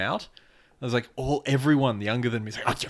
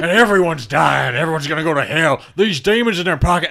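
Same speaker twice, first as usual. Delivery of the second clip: put-on very loud, crazed old-man ranting voice; 4 semitones higher, 9 dB louder than usual. Retelling a radio interview, imitating a crazy old man ranting. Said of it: "crazy old guy who's on a radio show".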